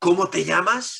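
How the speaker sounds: put-on harsher, harder tone. Storyteller acting out a repeated question to a young man, retelling in a harsher tone. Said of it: "con un tono un poco más duro".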